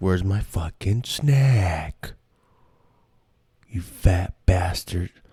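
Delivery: slow put-on dog voice, "snack" drawn out. A speaker voices what their dog would say to them, imitating their dog. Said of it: "an impression of my dog".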